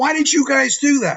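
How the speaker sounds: mock confronting holler, loud and high-pitched. Recounting a guy yelling at them in the Wawa, imitating someone yelling. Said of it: "he starts yelling at me".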